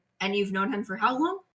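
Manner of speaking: hushed, soft voice. Voicing a character who looks over at Nock and asks: hushed tone. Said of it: "in a hushed tone".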